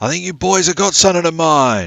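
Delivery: loud shout carrying far. Narrator voicing a sharp-dressed man calling across a cave, yelling out. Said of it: "and he yells out".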